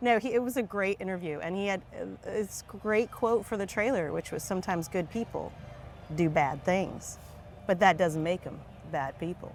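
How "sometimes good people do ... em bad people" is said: good, low Texas lawyer impression. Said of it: "That was a good impression".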